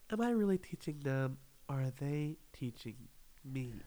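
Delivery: put-on pretentious voice. Mimicking the tone people always use, complaining about it: mock-pretentious tone. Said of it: "the tone that people use, they always go like".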